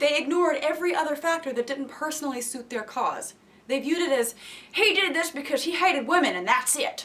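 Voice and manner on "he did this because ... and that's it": mocking put-on American Southern accent. A woman paraphrasing a group's view of a man, in a Southern voice. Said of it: "There's the first example of the Southern voice".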